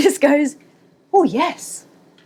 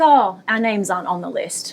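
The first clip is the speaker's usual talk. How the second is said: put-on confident tone, lower; 4 semitones lower than usual. Retelling what was said to a bouncer, imitating saying it confidently. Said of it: "we said confidently".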